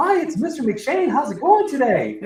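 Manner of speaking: squeaky, high little cartoon mouse voice. Imitating a man often heard from behind the speaker's cubicle, Mickey Mouse-like voice. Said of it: "listening to Mickey Mouse".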